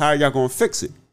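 mocking, sarcastic tone spoken through laughter. Retelling how someone asked a question in a post: imitating a sarcastic laughing question. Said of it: "sarcastically asking, la-, laughing way".

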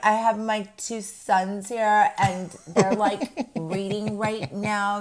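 snobby, haughty, superior woman's voice. Retelling what a woman at the airport said: imitating a snobby woman. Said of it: "did she really talk like this?".

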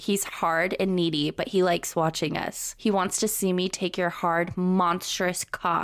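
usual speaking voice

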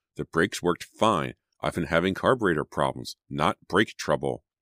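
ordinary delivery, nothing marked

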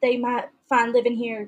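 ordinary delivery

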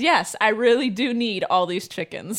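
ordinary delivery

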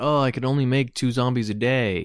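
ordinary delivery

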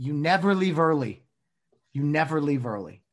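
loud, full-throated top-of-the-lungs shout. Recalling a favorite Dodger game memory, retelling a shout at full volume. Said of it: "I shouted at the top of my lungs".

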